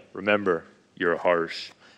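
deep commercial announcer voice. Retelling what his dad would say to him, speaker uses the Allstate voice. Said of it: "He'd be like with the Allstate voice".

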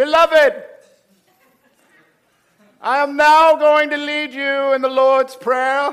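very loud preacher voice. Getting up in a little country church to lead the Lord's Prayer: Methodist communion-rail voice. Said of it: "swallow communion rail voice like".

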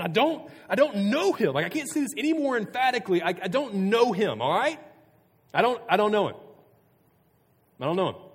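acted, furious, shrill, very loud, high-pitched outburst. Retelling Peter's third denial as he loses his mind: acting out furious cursing denial. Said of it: "began to invoke a curse on himself and just start swearing".

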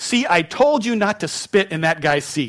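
play-acted, nice and loud, carrying. Retelling how a friend spoke up in a cinema: imitating a friend speaking loudly. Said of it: "nice and loud".

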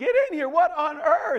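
shrill, very high screaming. Telling a story where the husband finds a new dress and calls his wife, retelling a scream. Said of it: "He screams".

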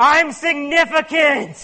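sudden, loud, high mock yell. Speaker retells a Calvin and Hobbes strip, retelling a yell. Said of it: "all of a sudden he yells out".

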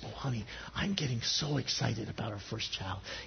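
soft, excited whisper. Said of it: "she whispers to her honey".

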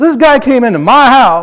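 grumpy, cranky tone. Speaker beginning a story about a guy who came into his house, grouchy. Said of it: "I got my grouchy voice out".

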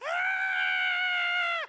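high, loud, panicked scream.

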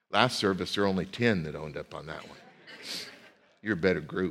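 deep, low, playful, light-hearted teasing. A preacher ribbing the congregation after a show of hands, teasing. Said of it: "I'm teasing you a bit".

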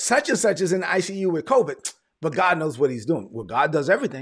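normal talking voice

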